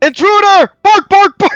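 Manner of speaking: dog-like barking yell. Spotting a wet stranger on deck and raising the alarm: shouting like a barking dog. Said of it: "Sorry, I don't bark".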